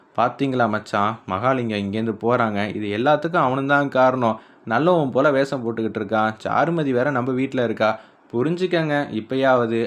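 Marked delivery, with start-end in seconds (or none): none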